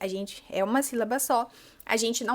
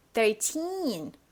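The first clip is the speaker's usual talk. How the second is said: put-on thirteen with strong, forced stress on -teen. Portuguese lesson on English number endings: stress on teen in thirteen. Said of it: "E você força esse som".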